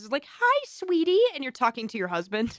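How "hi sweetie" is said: put-on sugary, sweet, high little-kid voice. Describing a daycare worker slipping into work talk at home, little kid voice. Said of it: "maybe you bring out the little kid voice".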